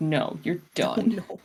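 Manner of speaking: flat, angry machine-like computer voice. Voicing the speaker's own computer refusing to work: imitating an angry computer. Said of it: "it's so mad at me right now".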